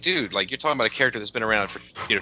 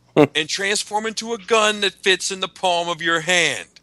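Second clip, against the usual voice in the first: put-on screaming voice, higher and louder; 9 semitones higher, 5 dB louder than usual. Imitating a toy maker demanding a huge Transformer: imitating McFarlane screaming. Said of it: "he'd be up there screaming".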